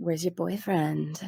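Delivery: hushed, soft, creepy, predatory voice. Recapping a scene where Louise greets Rory, imitating Louise's weird creepy voice. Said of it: "her weird voice".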